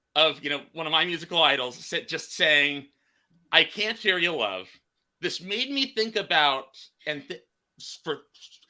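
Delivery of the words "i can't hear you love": normal talking voice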